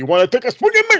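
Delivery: very high, loud, shouted-out yell. Retelling what gets yelled whenever the wrestler speaks: imitating own yelling. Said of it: "I just start yelling".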